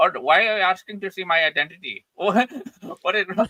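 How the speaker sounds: loud, fake put-on Indian accent. Acting out a reply to being asked for identity: put-on Indian accent. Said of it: "I would talk with an Indian accent".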